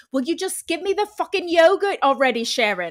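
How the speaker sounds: put-on polished British accent. Retelling her ex-boyfriend suddenly talking in his sleep, in a flawless British accent. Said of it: "in a flawless British accent".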